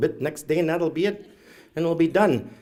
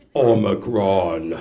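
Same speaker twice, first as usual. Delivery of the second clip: very deep, low, robot-like, menacing, scary voice; 8 semitones lower than usual. Retelling how an elder said the word omicron, in a very deep voice. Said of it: "she said in a really deep voice".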